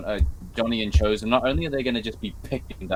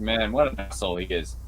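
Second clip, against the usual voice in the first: ordinary delivery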